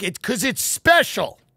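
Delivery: heartfelt, earnest, emotion-laden delivery. Imagining what they would have said had they gone, acting emotional. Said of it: "I'd get emotional".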